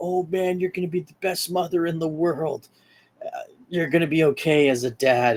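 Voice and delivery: bursting with excitement, super excited gushing. Retelling a character's reaction to a pregnancy announcement: imitating the Human Torch, super excited. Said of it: "he's super excited".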